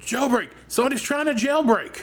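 high-pitched alarmed shout. Voicing an inmate during a jailbreak: yelling in alarm. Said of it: "someone's yelling".

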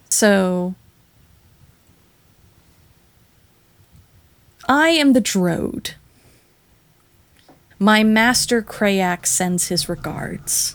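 menacing, threatening villain voice. Voicing a villain circling the party, menacing villain voice. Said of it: "a slow predatory kind of circle".

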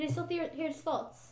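put-on British-accented speech. Asking the game master whether they can still hear thoughts: British accent. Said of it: "the accent's still going".

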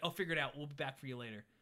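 plain

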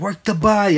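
mock high-pitched shout of urging. Speaker recalls screaming at the tv alone during a fight, retelling the scream. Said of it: "and I'm screaming".

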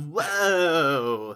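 loud, drawn-out nineties surfer-dude party voice. Voicing a grinning crocodile: nineties surfer frat boy party dude voice. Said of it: "nineties surfer frat boy catch-all, like, party dude impression".

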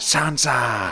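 soft, murmured, bad put-on voice. Showing the co-host his Littlefinger impression: Littlefinger impression. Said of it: "my Littlefinger impression".

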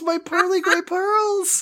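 mock whining lament. Acting out a character who whines and laments: mock whining lament. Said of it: "muttering, whining, and lamenting?".

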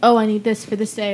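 ordinary talk

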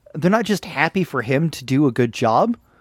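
ordinary talk, nothing marked

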